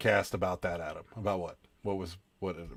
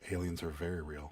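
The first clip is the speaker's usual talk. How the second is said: hushed, very quiet, soft-spoken murmur; 3 semitones lower, 10 dB quieter than usual. Imitating the guy who does Coast to Coast: soft-spoken impression. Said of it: "is real soft spoken. He's like, ... that's what he sounds like".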